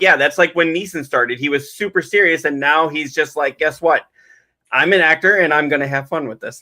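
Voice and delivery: ordinary talk, nothing marked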